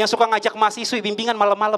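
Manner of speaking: ordinary delivery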